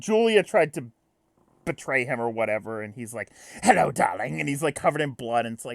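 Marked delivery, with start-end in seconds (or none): 3.6-4.4 hammy, theatrical, over-the-top, laid-on-thick delivery. Retelling a scene where Vicious, covered in blood, greets someone: imitating a hammy Vicious. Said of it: "He's really hamming it up".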